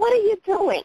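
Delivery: mock irritated, annoyed, very high-pitched voice. Retelling a story, voicing a man heard behind a woman at the dryer: imitating an annoyed voice. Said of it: "just annoyed, just like that".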